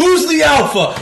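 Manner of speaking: high, loud, taunting yell.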